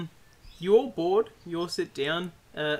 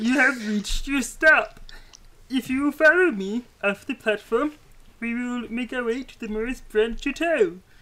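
high, loud, put-on little gnome character voice; 8 semitones higher, 6 dB louder than usual. A little gnome greets the party arriving at their stop: little gnome character voice. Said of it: "who now that you can all see is sort of this little gnome".

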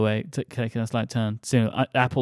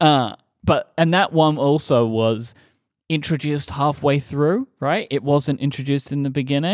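normal talking voice

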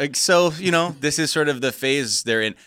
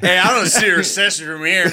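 mock drunk voice, higher and louder; 6 semitones higher, 5 dB louder than usual. Mocking a guest's tv clip: mock drunk voice. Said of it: "your impression of a drunk guy".

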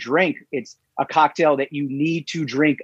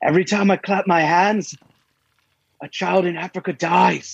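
terrible, bad, put-on Irish accent; 3 semitones higher than usual. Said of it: "Apologies to everybody in Ireland".

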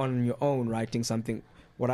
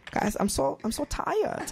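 very high-pitched, slow, drawn-out voice. Showing how Hitler could have sounded, a guy wanting a sandwich: imagined Hitler voice. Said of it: "Hitler could have sounded like this".

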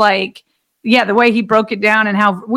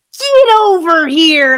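high, called-out, booth announcer-style voice; 7 semitones higher, 4 dB louder than usual. Describing a defender grabbing ball carriers, in a Pat McAfee voice. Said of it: "in his Pat McAfee v-, voice".

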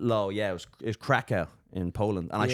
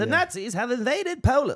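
very high, vintage wartime radio news announcer voice; 4 dB louder than usual. Showing how old radio announcers used to talk: old-time radio weird accent. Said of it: "everything's super stressed".

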